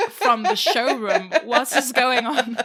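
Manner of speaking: high, loud, laughing incredulous outburst.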